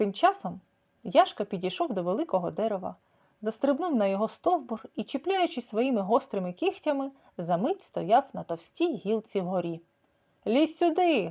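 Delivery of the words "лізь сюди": higher voice calling out across a distance. Narrator reads a character calling from a thick branch high in a tree, calling out. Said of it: "гукнув він".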